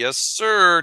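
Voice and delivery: put-on flat monotone voice. Speaker mimics how Twitch talks when in the zone, monotone Twitch impression. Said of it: "Twitch is so monotone when he's getting in the zone".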